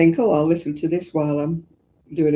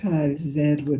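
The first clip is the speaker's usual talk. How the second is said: calm, soothing audiobook narrator voice; 5 dB quieter than usual. Retelling how a narrator whose voice he recognises opens, imitating Edward's soothing voice. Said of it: "You're great at sending me to sleep".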